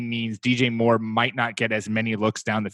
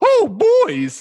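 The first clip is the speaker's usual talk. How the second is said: very high, shrill, loud cartoon mouse voice; 9 dB louder than usual. Speaker's voice drifts mid-sentence into a Mickey Mouse voice. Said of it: "merging into like my Mickey Mouse voice".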